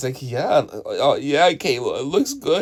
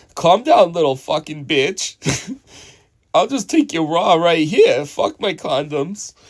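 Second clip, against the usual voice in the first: snide, defensive, slow, sarcastic retort; 3 semitones higher than usual. Imitating a man's defensive reply with a sarcastic remark: imitating a defensive sarcastic remark. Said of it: "defensive about it with the sarcastic remark, like".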